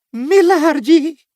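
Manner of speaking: choked-up voice. Reading a servant's plea to his master: choked-up voice. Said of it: "disse ele com a voz embargada".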